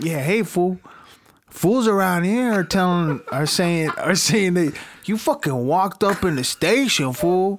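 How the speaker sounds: put-on Mexican accent. Acting out the cellmate greeting the jailed killer: acting Mexican cellmate voice. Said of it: "His cellmate's Mexican".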